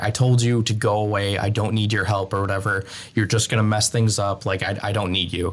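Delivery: sobbing, crying out voice. Retelling an anime scene where Nami sobs at Luffy: retelling a sobbing plea. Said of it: "sobbing and telling Luffy".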